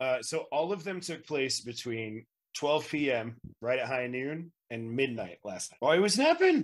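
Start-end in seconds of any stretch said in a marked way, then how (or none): 5.8-6.6 very high, squeaky, loud little gnome voice. Voicing a gnome woken from a bush: gnome character voice. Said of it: "a gnomish fellow comes crawling out of it and goes".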